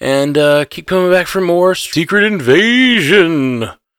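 high spooky ghost voice. Podcast host signing off to viewers, in a ghosty voice. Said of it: "I did like my ghosty voice".

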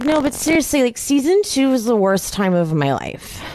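put-on drunken slurring. Speaker reads out dialogue they wrote down from a woman, imitating slurred speech. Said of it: "So she's slurring".

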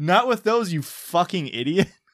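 mock furious yelling, loud and high-pitched. Reading a story aloud where the wife starts yelling: yelling angrily. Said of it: "she starts yelling".

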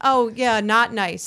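mock flat, unbothered deadpan tone. Retelling how he answered while she was screaming, imitating a flat reply. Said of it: "Mike responds flatly to her rage".

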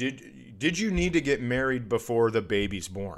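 plain

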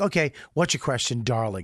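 breezy, campy, completely unruffled, calm manner. Retelling how a speaker answers hecklers: imitating a campy old queen. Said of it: "He just acts like a fucking old queen".

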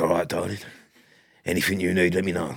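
creepy, low uncle-like voice. Riffing on slinking over to a woman, in a creepy 80s pub uncle voice. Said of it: "Creepy uncle from a pub in the 80s".

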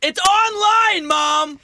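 very high, loud yelling outburst. Retelling yelling at mom for interrupting an online game, retelling own yell. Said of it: "I yelled at my mom".

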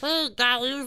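squeaky voice, high as if helium was inhaled. Trying the voice the others were doing: helium-high voice. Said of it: "I just sound like I have helium".

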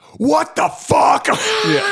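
very high, shrill, sustained yelling. Retelling how he laid into him: retelling a yell. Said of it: "I'm yelling at him".

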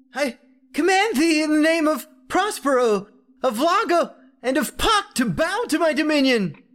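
very high, trembling, commanding shout. Reading a story, Laszlo commands the stranger: shouting in a shaky voice. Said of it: "began shouting in a shaky voice".

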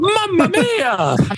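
high, put-on Italian accent. After offering to do an Italian accent for listeners: put-on Italian accent. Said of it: "you want me to do my Italian accent?".

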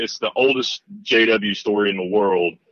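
plain

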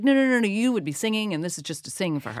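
ordinary talk

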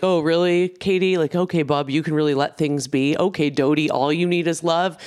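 teasing through laughter, mocking. Retelling a dinner where Schwartz laughed at the speaker and Katie: imitating Schwartz mocking. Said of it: "Schwartz is like laughing at us like".

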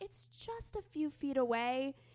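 put-on slow, tried-on English accent. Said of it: "so I'll try to do an accent".

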